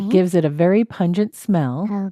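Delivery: ordinary delivery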